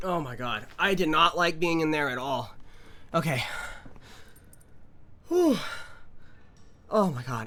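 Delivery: out of breath. Right after leaving a place they did not like, out of breath. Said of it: "I'm like out of breath".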